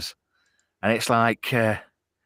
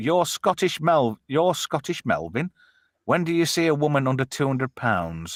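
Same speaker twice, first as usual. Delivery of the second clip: ordinary talk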